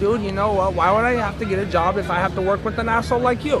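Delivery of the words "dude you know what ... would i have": ordinary delivery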